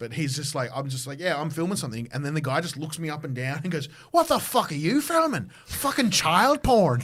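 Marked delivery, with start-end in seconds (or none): 4.1-7.0 put-on Irish accent, very loud and high-pitched. Retelling what a guy said while the speaker was filming, irish accent. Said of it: "because the Irish accent".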